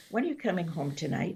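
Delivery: soft, quick, welcoming inviting tone. Demonstrating a line's intention, reading it as an invitation home, inviting. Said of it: "the intention to invite you to come home".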